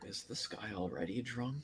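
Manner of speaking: very quiet, barely audible, hushed half-whisper. In character, leaning over to another character and asking a question, half-whispering. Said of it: "I lean over to Thought and whisper".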